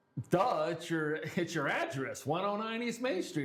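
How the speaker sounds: play-acted snide, sarcastic, duh-obvious tone. Retelling how a student answered a question: imitating a sarcastic student. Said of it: "with this sarcastic look and just went".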